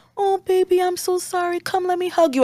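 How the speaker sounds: very high, tender, soothing, consoling tone. Acting out a mother when her child comes home crying: imitating a mother comforting. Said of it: "Or she could be like".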